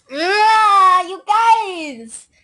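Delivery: yelling, with the "ah" stretched long. Complaining to the other players in the game, yelling. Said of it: "Lily doesn't like me yelling".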